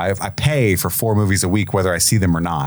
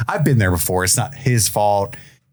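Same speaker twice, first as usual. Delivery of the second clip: usual speaking voice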